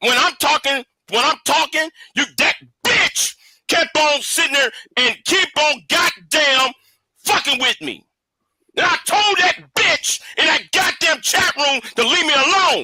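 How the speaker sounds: angry, pissed-off, furious heated tirade. Arguing on a panel after being interrupted: angry raised voice. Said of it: "the reason I'm pissed off and raise my voice".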